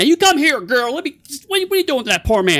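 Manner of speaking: loud, very high voice. In a roleplay scene, the speaker's character calls out to a girl: loud. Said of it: "Then I'm going to loudly say".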